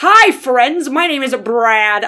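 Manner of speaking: slow, bad, horribly fake put-on American accent. Imitating a man putting on an accent, horribly fake american accent. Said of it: "it sounded like he was putting on this horribly fake American accent".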